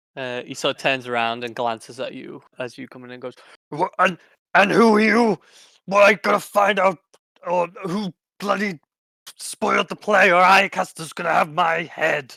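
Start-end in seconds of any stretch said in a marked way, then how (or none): 3.7-12.3 very loud, pitched-up dwarf voice, hammed up. Voicing a dwarf who turns to players rummaging through props: put-on dwarf voice. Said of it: "I feel like we need to speak to this guy".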